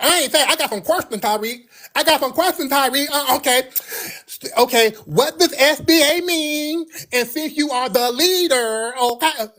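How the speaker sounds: very high, sassy, acted-out whining complaint. Retelling an argument, imitating a sassy man who was whining. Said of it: "Why are you so sassy?".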